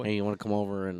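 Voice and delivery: put-on whack, low, soft Midwestern little boy voice. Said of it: "it's exactly how he fucking sounds".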